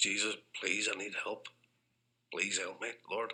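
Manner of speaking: acted bawling, tearful, crying voice. Retelling praying on their knees for help, retelling a bawling, crying plea. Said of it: "bawling and crying like".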